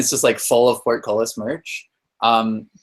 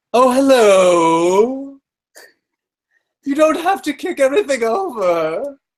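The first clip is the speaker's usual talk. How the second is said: squeaky, very high, slow gnome voice, "hello" drawn out; 13 semitones higher, 3 dB louder than usual. Describing a gnome that pops up from behind something, voicing it in a gnome voice. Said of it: "Is that the voice you were doing earlier".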